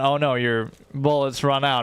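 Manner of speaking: usual speaking voice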